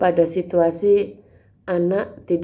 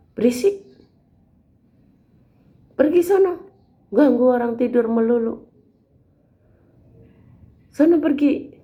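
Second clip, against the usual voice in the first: mock child voice, high, angry and snapping; 7 semitones higher than usual. Acting out a child refusing to pray, snapping at parents: imitating a child snapping angrily. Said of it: "Dia membentak orang tuanya".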